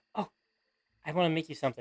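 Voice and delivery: put-on sweet innocent girl voice. Voicing Malia as she walks up to thank a player: voicing Malia. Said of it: "she plucks up a few flowers".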